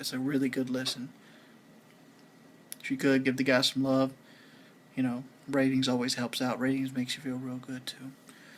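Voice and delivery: low, hushed talk. Signing off a video late at night for viewers, talking low. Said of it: "Sorry I'm talking so low".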